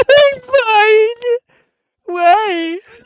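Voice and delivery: put-on sobbing scream. Speaker acts out answering a concerned question, mock scream-crying. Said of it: "you're like scream crying".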